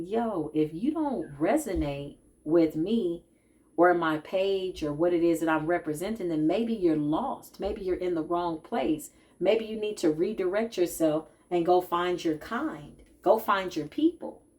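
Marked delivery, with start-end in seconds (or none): none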